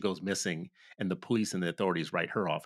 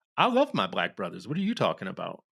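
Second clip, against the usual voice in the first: put-on loud, swooping, strong Oakland accent; 5 dB louder than usual. Retelling what a sister from Oakland said on a panel: strong Oakland accent. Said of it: "She said it with a very Oakland accent".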